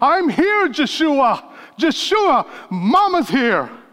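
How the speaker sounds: play-acted, high-pitched, crying-out voice. Speaker describing Mary at the foot of the cross: imitating Mary crying out. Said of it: "Hear her cry saying".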